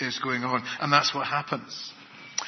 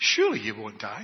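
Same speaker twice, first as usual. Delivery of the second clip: doubt-sowing tone, statement rising like a question; 4 semitones lower than usual. Speaker acts out Satan's words to Eve: Satan's questioning tone. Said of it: "That's the tone of voice that he uses".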